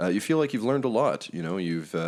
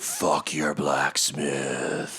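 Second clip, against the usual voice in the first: snarling, growling dragon voice, lower pitch; 4 semitones lower than usual. Voicing the dragon's reply to the party, snarling dragon voice. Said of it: "the dragon appears and snarls".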